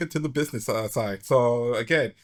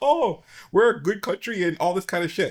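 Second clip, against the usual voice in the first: put-on high-pitched Indian accent through the whole phrase; 6 semitones higher than usual. Voicing what certain countries expect people to say, in a put-on Indian accent. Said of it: "that your Indian voice?".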